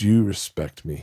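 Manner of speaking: put-on voice of a man crying, sobbing. Retelling a phone call from a grown man: imitating a man crying. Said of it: "it's a grown man crying".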